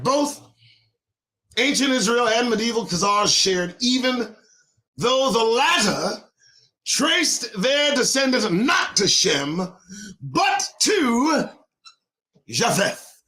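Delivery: breathless, winded, running short of air. Reading a long passage aloud to listeners, out of breath. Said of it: "let me catch my breath".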